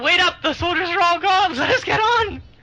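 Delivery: high-pitched, loud shout. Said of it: "can't we just shout and say".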